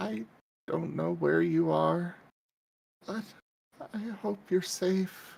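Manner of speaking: high voice full of hurt, pained. Reading Sam's words as the listener hears them: Sam's pained voice. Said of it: "All you hear is Sam in a pained voice".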